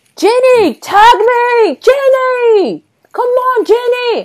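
mock scream with German accent. Retelling how a wrestler yelled to her tag partner: imitating Jazzy screaming, attempted German accent.

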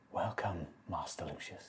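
very quiet, eerie creature half-whisper. A being from your shadow greets you, in a half-whisper. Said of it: "in a voice, this time in a whisper".

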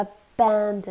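slow, with stress on BAN in abandoned. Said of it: "so we stress the second syllable".

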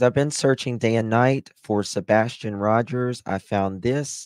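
ordinary talk

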